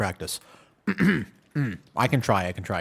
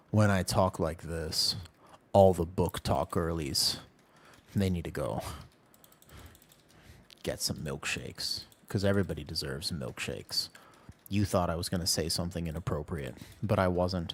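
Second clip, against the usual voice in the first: low, hushed, dark ASMR voice; 6 semitones lower, 7 dB quieter than usual. Talking to the book talk girlies: dark asmr voice. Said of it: "speaking in my dark A S M R voice".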